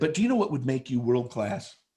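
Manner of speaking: normal talking voice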